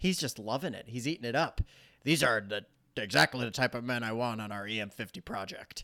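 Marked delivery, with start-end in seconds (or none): 2.0-5.8 character voice, relishing it. Retelling a favorite movie scene, impersonating the lieutenant from the movie. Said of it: "Pretty good impersonation".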